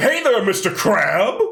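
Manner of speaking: high, little, cartoonish sea-villain voice. Retelling an anime character calling to Mister Crab, Plankton voice. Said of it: "sounds fucking exactly like Plankton from SpongeBob".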